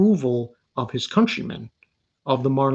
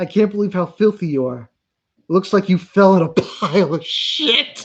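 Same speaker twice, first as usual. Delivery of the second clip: giggling through words, higher and louder; 6 semitones higher, 5 dB louder than usual. Retelling a scene from a show, laughing while talking. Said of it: "I'm sorry, I'm laughing".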